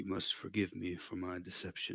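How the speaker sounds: put-on steady, unhurried, calm elderly man voice. Speaker retells what the turtle says, in a booming calm old man voice. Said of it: "it's a booming voice, ... sounds like a kind of calm old man".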